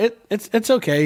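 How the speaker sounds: put-on high, small child's voice, stumbling over words. Retelling a Fortnite encounter, the speaker imitates a kid in a small child's voice. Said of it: "This kid sounds like he's four".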